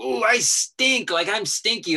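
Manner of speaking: slow, loud, high, drawn-out wailing scream. Retelling a call to a voter fraud hotline: imitating own screaming. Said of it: "I just started screaming".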